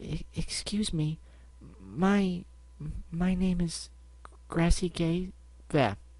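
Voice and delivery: gentle, soft-spoken. Reading a story, a visitor answers the boutique clerk, soft voice. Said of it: "came a soft voice".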